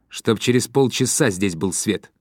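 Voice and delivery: ordinary talk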